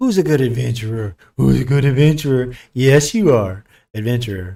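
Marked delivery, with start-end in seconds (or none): 0.0-3.6 loud puppy-talk voice. Speaking to an adventurer in a put-on talking-to-a-puppy voice. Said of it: "I'm talking to my puppy dog voice".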